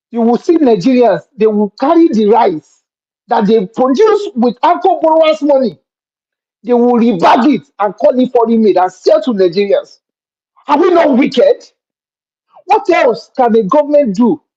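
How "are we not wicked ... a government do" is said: impassioned, fired-up, heated voice. A speaker defending a government policy to listeners: shouting. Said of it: "I'm sorry, I'm shouting".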